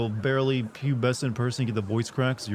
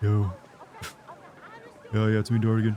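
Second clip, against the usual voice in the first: put-on low, dead-flat monotone; 3 semitones lower than usual. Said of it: "That's me trying to put on my best, uh, you know, Moist Critical impression".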